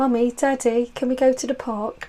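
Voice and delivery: put-on little kid's childlike British accent. Talking about irish parents, recalling speaking as a child in a british accent. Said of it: "I used to speak like that".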